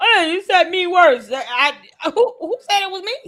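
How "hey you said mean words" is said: put-on loud, whiny, petulant childish whine. Mocking someone acting like a petulant child: mocking a petulant child. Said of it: "You're acting like a petulant child".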